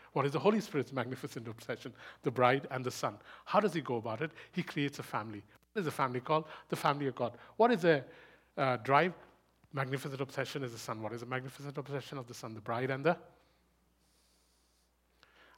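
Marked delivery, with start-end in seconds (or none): 11.0-12.5 very fast, rushed speech. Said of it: "I know I'm speaking really fast".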